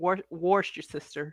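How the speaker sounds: put-on Southern American accent. Describing how someone says a phrase, imitating his southern accent. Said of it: "he has a southern accent".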